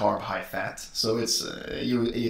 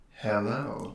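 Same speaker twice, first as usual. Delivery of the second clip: put-on sultry, seductive, dark, sexy voice; 4 dB quieter than usual. Greeting viewers again after being asked: put-on dark and sexy voice. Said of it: "Can you do it in a dark and sexy voice?".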